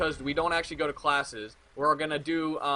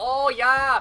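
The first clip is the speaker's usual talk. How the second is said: put-on Swedish accent, very high and loud; 9 semitones higher, 7 dB louder than usual. Speaker voicing pigeons being thrown breadcrumbs, in a swedish accent. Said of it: "I don't know why they're fucking Swedish".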